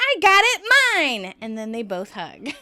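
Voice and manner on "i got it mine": piercing, shrill, very high and very loud yell. Recounting a TV scene where Phoebe catches the bouquet, retelling Phoebe's yell. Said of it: "Phoebe catches it and yells".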